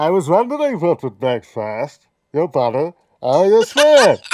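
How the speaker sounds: very slow, loud, drawn-out, swooping delivery. Quoting a villain line to compare voices: Bane voice. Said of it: "that Bane, um, attempt".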